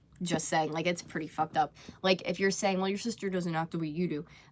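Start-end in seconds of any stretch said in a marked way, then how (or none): none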